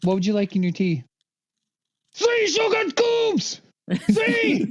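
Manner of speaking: put-on furious German voice, very high. Joking with friends about speaking german: put-on angry german accent. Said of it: "He only does a Nazi accent".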